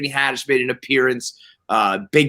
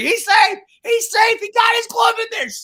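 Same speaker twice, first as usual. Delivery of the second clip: very high, put-on screaming and yelling, excited. Recounting watching a replay amid a crowd, he reenacts his own screaming. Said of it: "screaming and yelling".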